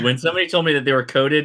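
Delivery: ordinary delivery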